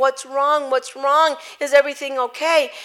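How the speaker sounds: frantic tearful yelling, crying, panicked scream. Retelling their daughter in the back seat after the car pulled over, retelling crying and screaming. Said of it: "our daughter's in the back crying, yelling, screaming".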